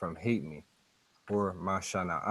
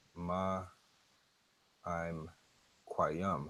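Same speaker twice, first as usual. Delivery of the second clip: ma i'm quayam carefully slowed; 5 dB quieter than usual. Going through the next words, repeats the phrase: slow ma i'm quayam. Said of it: "Let me do this slow here".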